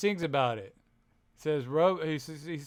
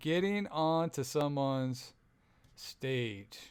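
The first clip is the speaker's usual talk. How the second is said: very slow, dragged-out, drawn-out delivery; 6 dB quieter than usual. Speaker repeats Erica's answer back to her, imitating Erica's slow answer. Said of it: "You said that slow".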